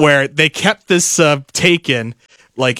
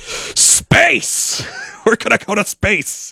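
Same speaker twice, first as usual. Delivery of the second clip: full-throttle, very slow, wheezy, creaky, rough and high; 7 semitones higher than usual. Retelling a game clip of a Russian commander: Tim Curry voice with Russian accent. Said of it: "in the Tim Curry voice".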